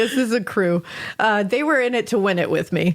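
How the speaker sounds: ordinary delivery, nothing marked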